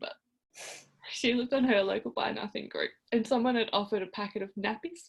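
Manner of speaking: voice rising with emotion. Telling how a friend helped her get nappies, the speaker is getting emotional. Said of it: "I don't know why I'm getting emotional".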